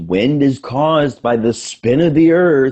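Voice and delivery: mock angry, egotistical, high-pitched know-it-all insistence. Retelling an argument on a call with another person, mock-angry and egotistical. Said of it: "he was all like angry and like egotistical".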